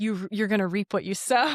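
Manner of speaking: usual speaking voice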